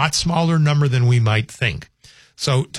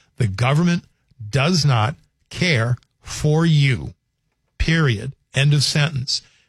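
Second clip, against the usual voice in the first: spoken much slower than normal. A speaker repeating a point one more time to listeners: said real slow. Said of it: "I'll say it real slow".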